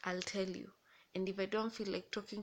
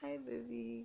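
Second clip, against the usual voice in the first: mock humble tone, higher pitch; 3 semitones higher, 3 dB quieter than usual. Retelling how he answers a call from his mother: imitating his humble tone. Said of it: "the humbleness, the tone".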